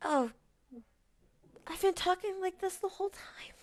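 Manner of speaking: very soft, tinny, echoing voice, like inside a helmet. Speaking as Wilda through a diver's helmet: soft voice with tinny echo. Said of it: "while it is soft, it is also in, like, an echoey vibe".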